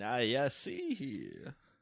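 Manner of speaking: put-on swooping Southern lawyer accent, drawled. Demonstrating the accent he just described, in a Southern lawyer voice. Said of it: "Southern Lawyer".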